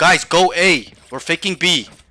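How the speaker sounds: very loud, slow, assertive commanding yell. Showing a teammate how to give calls to the team: assertive yelling. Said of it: "You need to yell at them".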